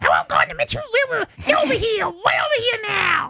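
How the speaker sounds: put-on little dog voice. Speaker talking about her pet french bulldog, voicing her in a little french bulldog voice. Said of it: "I like to do the little French bulldog voice".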